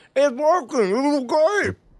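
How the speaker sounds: very high-pitched talking, muffled by full mouth. Retelling what he said to Justin, acting out talking with his mouth full. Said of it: "I say with my mouth still full".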